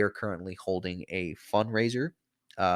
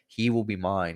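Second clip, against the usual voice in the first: ordinary delivery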